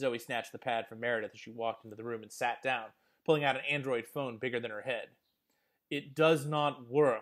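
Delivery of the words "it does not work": very slow, each word distinct and deliberate. [name] speaks in a room with Meredith and Zoe, slowly and distinctly. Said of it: "slowly and distinctly".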